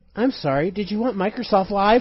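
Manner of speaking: put-on automated phone voice. Retelling a call where the phone machine hung up: imitating an automated phone system. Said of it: "The machine hung up on you".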